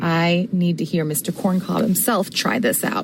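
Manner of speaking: usual speaking voice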